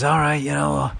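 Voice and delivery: raspy, throaty mafia boss voice. Retelling a film scene, quoting the character: raspy Marlon Brando voice. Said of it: "he's doing the, the Marlon Brando, like, raspy voice thing".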